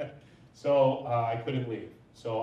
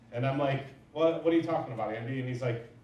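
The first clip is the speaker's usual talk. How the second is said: normal talking voice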